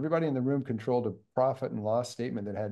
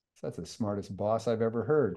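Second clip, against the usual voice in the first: normal talking voice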